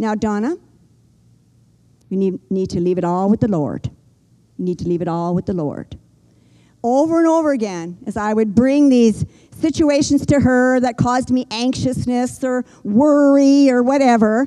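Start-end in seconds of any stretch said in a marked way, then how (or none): 0.0-6.0 put-on low voice with a slight Newfoundland accent. Quoting a Scripture-loving woman's repeated advice to her, little Newfoundland accent. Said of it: "she would say in her little newfie accent".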